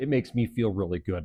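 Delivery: normal talking voice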